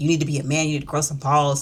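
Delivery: plain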